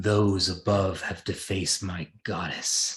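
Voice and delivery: loud, booming voice calling from above. Voicing a figure that calls up from the lake above: voice from the lake above. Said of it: "you hear a voice coming from the, the kind of lake above".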